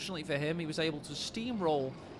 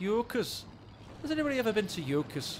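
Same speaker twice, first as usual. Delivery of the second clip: bad, botched Scottish accent, pitched up; 6 semitones higher, 3 dB louder than usual. During game commentary, attempting a scottish accent that doesn't come out right. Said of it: "That's again not a Scottish accent".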